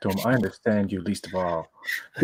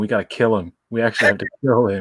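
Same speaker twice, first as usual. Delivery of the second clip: plain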